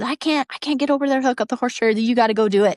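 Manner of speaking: mock frantic, rushed, panicked voice. Recounting a camping trip, quoting his midday phone call, imitating a panicked phone call. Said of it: "in a panic in the middle of the day".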